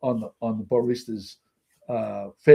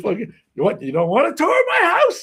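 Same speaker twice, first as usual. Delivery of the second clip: very loud, high, swooping crass rant, acted out; 5 dB louder than usual. Retelling a scene where the wife turns on Larry: imitating a loud, crass woman. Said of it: "very loud and crass".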